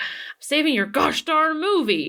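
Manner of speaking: put-on crotchety old man voice. Retelling a story of Oliver Wallace answering Walt Disney on set: crotchety and old. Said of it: "super like, I don't know, crotchety and old".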